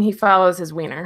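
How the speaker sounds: ordinary talk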